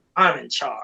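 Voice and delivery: mocking, sarcastic tone. Retelling how an actor was supposed to say his line: imitating a sarcastic line. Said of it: "like, sarcastic".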